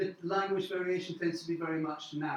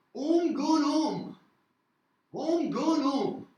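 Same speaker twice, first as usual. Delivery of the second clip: very drawn-out Cambridgeshire village accent; 9 semitones higher, 6 dB louder than usual. Speaker demonstrates how people in villages around Cambridge say it, Cambridgeshire village accent. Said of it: "in the villages around Cambridge".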